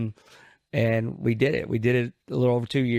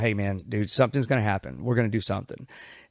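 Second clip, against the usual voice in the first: urgent, earnest, begging, pleading voice; 2 semitones lower than usual. Retelling how they urged a partner not to quit: retelling own past begging. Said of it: "I was just begging".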